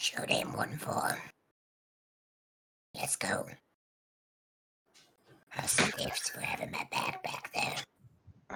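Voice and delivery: put-on high, swooping goblin character voice. Speaking as a character in the group's story, in a goblin voice. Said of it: "While I love the goblin voice".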